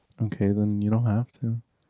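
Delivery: modest, reserved, meek and demure. Answering another speaker's request to marathon a film franchise, demure. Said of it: "Why do you sound so demure saying that?".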